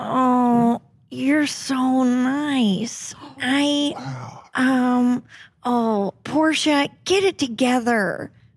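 put-on breathy actress voice. Doing an impression when asked to hear it again: Jennifer Coolidge voice. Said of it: "[name] doing Jennifer Coolidge".

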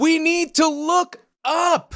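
very high, long, drawn-out yell. Voicing a character calling out to everyone on the ship: yelling. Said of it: "just kind of yells, like".

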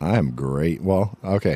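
very deep, low, dropped voice. Greeted by the host on the show, answering in a voice an octave lower. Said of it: "my octave lower voice right now".

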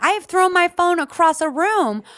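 high, loud, wound-up screaming rant. Imitating a radio advice host screaming at a caller: imitating Dr. Laura screaming. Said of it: "So she starts screaming".

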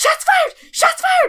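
frantic, panicked outburst, very high-pitched. Retelling how another player reacted to distant gunshots, imitating someone freaking out. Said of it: "he'd like start freaking out".

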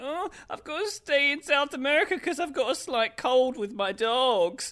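put-on high-pitched whiny teenager voice. Quoting a footballer's Instagram excuse, in an Alexis Sanchez impression. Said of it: "That was a good impression".

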